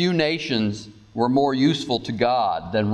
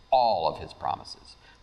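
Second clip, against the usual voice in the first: strong stress on the word "all"; 6 semitones lower, 4 dB quieter than usual. Speaking about god's promises, strong stress on all. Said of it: "Why do I emphasize the word all?".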